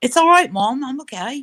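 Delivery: fake English accent. Retelling answering their mom's question on the phone, the speaker uses a fake English accent. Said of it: "pretend I'm a foreign exchange student from England".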